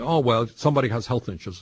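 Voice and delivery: plain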